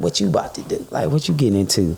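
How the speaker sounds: smarmy, sleazy, suggestive come-on tone. Retelling what people at the club say: imitating a sleazy come-on. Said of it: "They be real sleazy".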